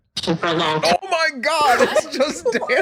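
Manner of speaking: high, laughing disbelief, words laughed out.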